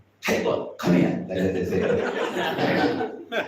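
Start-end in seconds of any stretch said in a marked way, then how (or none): 0.3-1.3 loud, harsh, angry, demanding shout. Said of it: "Samrambhi means angry devotee".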